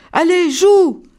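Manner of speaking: high, pressing, insistent. The rabbits urge a reluctant visitor to join their game; insisting. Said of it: "Insistent les lapins".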